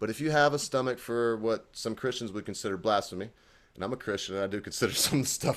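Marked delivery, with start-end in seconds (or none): 4.4-5.6 speaking through laughter. Recommending a show some Christians would call blasphemy, laughing while talking. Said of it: "I can't say it without laughing".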